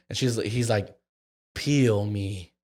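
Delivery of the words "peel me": put-on sultry, suggestive, seductive delivery. Retelling a dating game answer: imitating a seductive voice. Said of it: "pretty, like, seductively".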